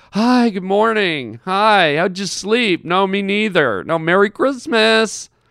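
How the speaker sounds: slow, wrecked, sleepy, tired morning voice. Speaker describes everyone greeting each other early christmas morning, imitating a tired morning voice. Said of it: "everyone's got this voice like".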